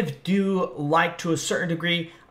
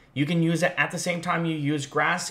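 ordinary talk

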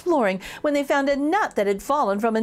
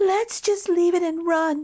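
whispering, much higher pitch; 6 semitones higher than usual. The yellow pepper speaks to the red pepper, whispering. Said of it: "the yellow pepper whispered".

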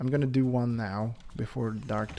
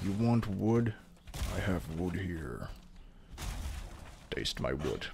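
put-on low, hushed troll voice; 4 semitones lower, 5 dB quieter than usual. Gathering wood in a game, imagining a troll swinging a club, troll voice. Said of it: "The troll would be something like".

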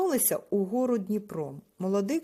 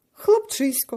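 loud, astonished cry of surprise; 4 semitones higher, 6 dB louder than usual. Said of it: "здивувався Сидір".

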